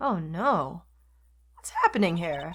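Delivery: voice cracking. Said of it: "why is my voice breaking so bad".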